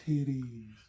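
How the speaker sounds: pitched high and feminine. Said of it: "he does almost like the feminine, [name], stereotypical voice".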